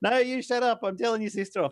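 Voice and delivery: mock angry shouting, loud yell. Retelling the driver snapping back at him during the car argument, retelling an angry yell. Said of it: "having a screaming match".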